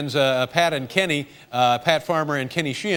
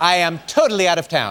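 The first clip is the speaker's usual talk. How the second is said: firm, louder delivery; 2 semitones higher, 5 dB louder than usual. Retelling a phone call inviting her onto the show, imitating Oprah Winfrey. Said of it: "That was Oprah".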